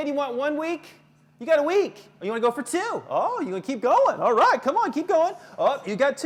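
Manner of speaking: fast, loud, rattled-off auctioneer patter. Showing how a parent escalates a kid's punishment; auctioneer voice. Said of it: "You sound like an auctioneer".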